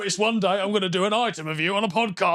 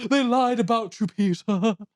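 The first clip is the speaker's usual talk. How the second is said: put-on eloquent man's voice; 2 semitones higher than usual. Retelling a story, the speaker quotes a man speaking to Peter, imitating an eloquent man. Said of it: "And he's quite like eloquent".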